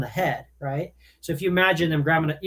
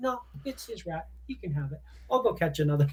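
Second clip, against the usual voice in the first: mannerly, courteous put-on dog voice; 8 dB quieter than usual. Voicing the thoughts of a polite pit bull giving up her rat: voicing a polite dog. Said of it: "She's like".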